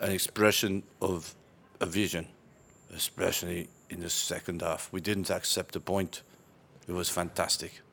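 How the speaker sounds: quiet, flat, low-key bored monotone drone. Asked to do a football interview after a club record, give a bored-sounding Jose Mourinho impression. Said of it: "You have to sound really bored".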